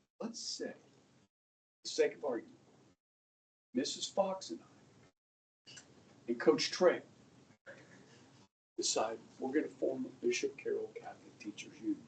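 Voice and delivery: hushed, secretive, conspiratorial whisper. A teacher poses a hypothetical to listeners, whispering. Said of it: "Why am I whispering?".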